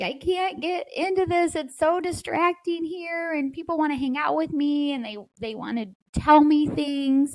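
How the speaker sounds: tearful crying voice. Retelling a friend's phone call after moving back home: imitating someone crying. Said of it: "She would call me crying".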